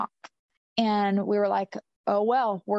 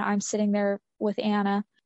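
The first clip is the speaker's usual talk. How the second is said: ordinary delivery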